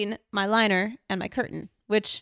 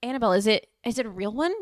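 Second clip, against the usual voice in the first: ordinary delivery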